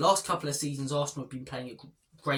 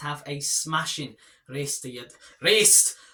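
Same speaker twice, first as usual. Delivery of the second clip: loud, drawn-out, put-on Scottish accent; 5 dB louder than usual. YouTuber signing off to viewers, slipping into a Scottish accent. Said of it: "I went all Scottish".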